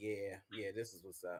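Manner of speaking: very low, soft pleased murmur with a laugh. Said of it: "You'd be like".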